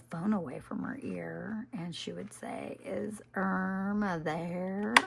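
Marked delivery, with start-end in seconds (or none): 2.8-4.9 loud, mocking sarcastic mimicry, one word dragged out. Your sarcastic mother pulls the phone away from her ear and does a sarcastic imitation of the caller. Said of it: "she was imitating her".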